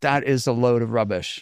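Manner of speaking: ordinary talk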